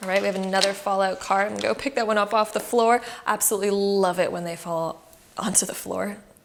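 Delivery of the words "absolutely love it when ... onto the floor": sarcastic, mock enthusiastic tone. Picking a fallen card up off the floor: sarcastic. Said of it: "That's sarcastic, by the way".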